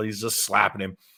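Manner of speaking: plain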